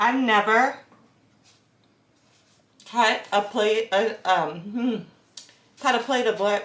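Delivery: talking with mouth full. Testing a bread knife and eating the bread; talking with mouth full. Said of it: "Let me finish chewing".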